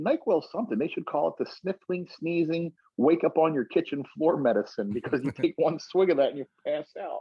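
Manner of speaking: goofy, funny, high-pitched comedian voice. Retelling a comedian's joke about NyQuil in his funny voice. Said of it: "he had a really funny voice".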